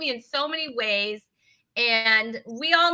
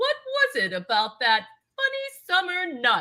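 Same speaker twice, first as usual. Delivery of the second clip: dramatic narrator voice with big sing-song pitch swoops; 2 semitones higher than usual. Joking about having the gray-haired narrator narrate, doing a half-Julia Child narrator voice. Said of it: "that voice sounded half him, half Julia Child".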